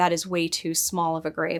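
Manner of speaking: ordinary delivery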